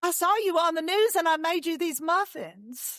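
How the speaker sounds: Southern American lady's voice, pitched high. Asked to repeat a lady's words in your best southern accent: southern accent. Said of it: "Say that again in your best Southern accent".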